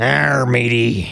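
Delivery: mock pirate speech. Asked whether he's a pirate, answering in a pirate voice. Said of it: "What are you, a pirate?".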